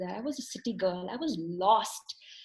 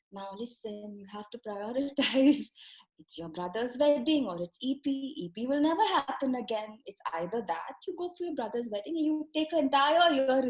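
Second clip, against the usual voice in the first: lilting, up-and-down sing-song voice; 3 semitones higher than usual. Retelling what the coordinator told her about a wedding: imitating a sing-song voice. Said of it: "in her sing-song voice".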